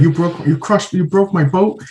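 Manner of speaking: fed-up fuming voice. Retelling a movie character's angry complaint: imitating someone pissed off. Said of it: "he was so pissed".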